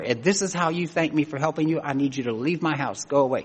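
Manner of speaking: normal talking voice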